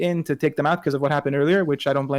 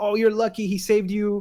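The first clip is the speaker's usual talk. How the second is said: high-pitched squealing whine; 5 semitones higher than usual. Retelling a wrestler taunting from another's shoulders: imitating AJ Styles squealing.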